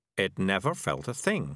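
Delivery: ordinary delivery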